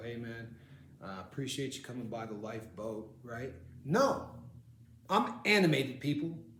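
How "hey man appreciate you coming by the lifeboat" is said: lifeless, unanimated monotone, very low and very soft. Speaker shows how they don't talk, contrasting with being animated: unanimated delivery. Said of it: "I don't talk like this and go".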